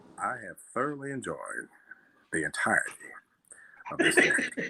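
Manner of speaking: movie narrator voice, like a film voice-over. Closing the stream after being asked for it: Morgan Freeman voice. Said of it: "you wanna give him a Morgan Freeman voice".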